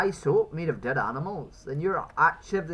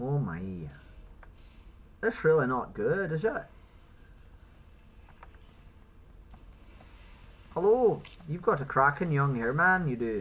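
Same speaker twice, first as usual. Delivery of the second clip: goofy, silly put-on Irish accent played for laughs. Greeting someone in a comedy bit, silly irish accent. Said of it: "where I just do a silly Irish accent".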